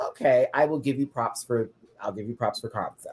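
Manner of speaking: usual speaking voice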